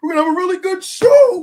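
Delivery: strained yell, very high, very loud. Retelling how Tony Khan stomps and shouts into the mic: imitating Tony Khan shouting into the mic. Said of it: "he'll stop his, like, his foot down, like, he'll be like".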